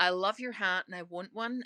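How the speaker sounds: ordinary talk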